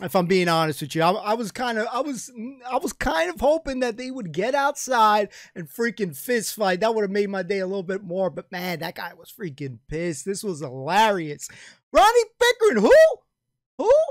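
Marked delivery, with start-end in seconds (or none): 11.9-13.9 very high, fast, owl-like hooting yell. Retelling an enraged man's road rage outburst, imitating an owl-like hooting shout. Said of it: "guy sounded like a freaking owl".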